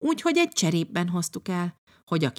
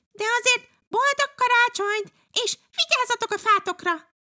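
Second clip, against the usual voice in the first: very high, called-out tone. From the neighbouring fir tree, calling across to the children, calling out in farewell. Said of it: "kiáltották át búcsúként".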